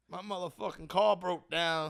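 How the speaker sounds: drawled slowly, a bit off. Trying a Bernie Mac voice after being asked, bad Bernie Mac impression. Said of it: "I can't do a good Bernie".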